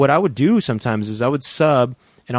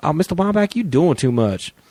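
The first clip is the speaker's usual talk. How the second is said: put-on childlike schoolkid voice; 4 semitones higher than usual. Recalling a phrase people used to say, the speaker does an impression of them. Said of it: "I would do impressions of them saying".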